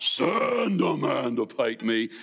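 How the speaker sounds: low, slow, horribly menacing giant voice. Imagining a huge man with a spear calling out a challenge, horribly low, menacing voice. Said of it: "this horribly low, menacing voice".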